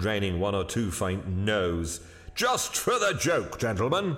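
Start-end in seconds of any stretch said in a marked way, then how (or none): 2.4-4.2 keen, eager, very high-pitched voice. Hurst, told by another man to drop it, presses the others eagerly. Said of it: "said Hurst somewhat eagerly".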